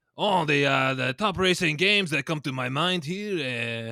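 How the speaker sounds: put-on French accent, very loud, slow and stretched. Answering a request for your best french accent: french accent. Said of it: "give me your best French accent".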